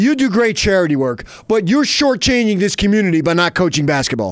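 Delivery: mocking, sarcastic delivery. Showing another speaker what sarcasm sounds like: sarcastic. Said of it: "That's sarcasm".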